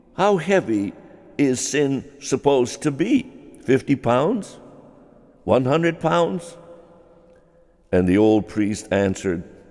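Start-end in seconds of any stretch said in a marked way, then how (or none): 0.2-6.6 taunting, derisive, scornful, mocking tone. Telling a story of a cynic taunting a village priest; retelling a mocking question. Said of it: "he said mockingly".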